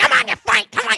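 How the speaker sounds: cartoon voice pushed way up, very high and loud. Acting out a temper tantrum over a missing hat: Donald Duck voice. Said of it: "like one of the voice actors for Donald Duck do that".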